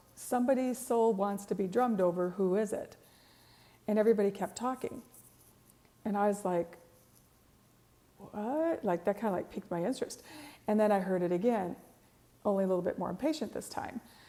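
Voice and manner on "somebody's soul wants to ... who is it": plain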